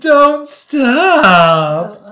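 very high, loud voice, "stop" stretched long. Retelling what a contestant said in the fantasy suite: imitating Victoria. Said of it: "that's your Victoria?".

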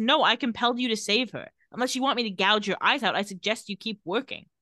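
usual speaking voice

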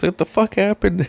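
mock laughing, amused. Retelling pedaling over to an injured guy, retelling a laughing question. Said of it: "I kind of laughed".

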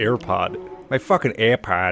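thick, laid-on Boston accent, low mutter. Riffing with friends on an underrated word, said in a heavy Boston accent. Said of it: "in a heavy boston accent".

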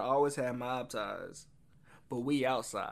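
usual speaking voice

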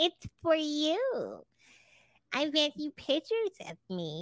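put-on high sing-song baby voice, "you" drawn out. Retelling what she said to him as he came into the house, fake baby voice. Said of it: "you're using the fake voice you use for me and my baby voice".

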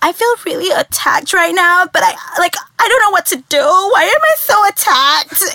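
put-on valley girl teenage girl voice.

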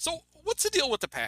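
very high-pitched, swooping comedic delivery. Asking about a football team, terrible Jerry Seinfeld stand-up voice. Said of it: "You sound like a stand-up".

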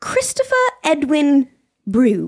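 slow, mock British accent. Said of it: "I'm saying it in a British accent".

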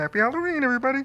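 very hushed, quiet put-on frog puppet voice. Returning to the Kermit voice to greet everybody: Kermit the Frog voice. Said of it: "Go back to your Kermie".

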